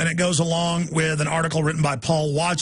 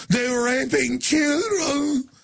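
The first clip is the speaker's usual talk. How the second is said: high, shouted fake Arabic accent. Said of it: "One day he's like".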